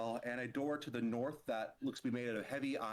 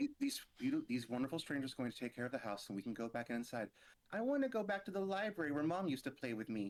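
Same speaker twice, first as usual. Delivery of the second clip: put-on sing-song, swooping baby talk; 2 semitones higher than usual. Playing a five-year-old ghost asking if it's safe to go back inside: talking like a baby. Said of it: "Why is he talking like a baby?".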